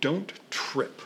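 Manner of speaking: put-on brutalized British accent. Retelling what John told him before he went out, in John's British accent. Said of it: "in his very British accent, which I'll brutalize here".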